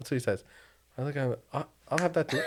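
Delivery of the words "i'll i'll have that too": put-on British accent, pitched up. Retelling ordering on a plane like a UK passenger: imitating own put-on British accent. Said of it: "you start changing your accent".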